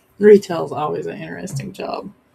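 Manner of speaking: dry, tongue-in-cheek sarcasm. Remarking on retail work after a work story: sarcastic. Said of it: "she says with sarcasm".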